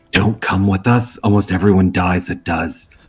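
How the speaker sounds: faintest possible, slow, barely audible secretive half-whisper. Warning a companion in character so no one else hears: half-whispering as quietly as possible. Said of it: "lean over and whisper as quietly as possible".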